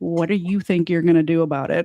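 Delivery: composed, cool, very calm taunting voice. Retelling a standoff with her hands folded: imitating her own calm taunt. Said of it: "I very calmly say".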